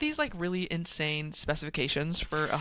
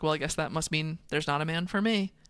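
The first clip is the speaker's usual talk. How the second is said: ordinary talk, nothing marked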